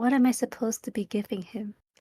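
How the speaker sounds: in a whisper. Voicing a character asking another character at the city gates: whispering. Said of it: "Makari whispers to Cyril".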